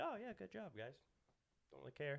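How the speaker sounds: indifferent, half-hearted cheer. Imitating another speaker reacting if the team wins: imitating a friend's indifferent tone. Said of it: "you're still just gonna be".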